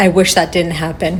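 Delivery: ordinary delivery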